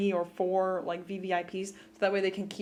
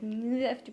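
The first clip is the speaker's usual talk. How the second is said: mock sulky, pouty and reproachful; 3 semitones higher than usual. Retelling a show scene, a character complaining: imitating a pouty complaint. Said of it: "all pouty".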